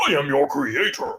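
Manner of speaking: mightiest, most godly voice. Addressing the lizard person in the mightiest, most godly voice possible. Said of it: "in the mightiest, most godly voice I can".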